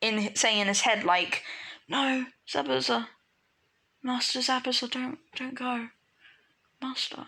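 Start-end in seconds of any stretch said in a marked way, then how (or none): 1.9-7.3 play-acted sleep-talking voice. Retelling a planned story scene where a knocked-out character speaks: imitating someone sleep talking. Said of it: "he's gonna start sleep talking almost".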